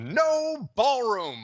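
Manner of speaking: over-the-top, high delivery with widely swooping pitch. Act out his punchline to someone who asked him why: over-the-top Mickey Deems delivery. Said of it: "that kind of delivery. It was so over the top".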